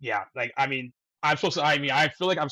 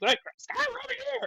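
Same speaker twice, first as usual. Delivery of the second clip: fake scream, much higher pitch; 3 dB quieter than usual. Recounting the scene where Carly spots Scott and calls him over, imitating Carly's scream. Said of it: "Carly sees him and screams".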